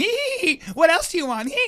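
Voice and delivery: very high-pitched, giddy, giggling flirty voice. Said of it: "getting all giddy".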